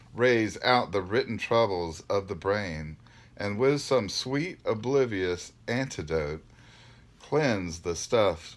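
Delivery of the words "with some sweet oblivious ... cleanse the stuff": ordinary delivery, nothing marked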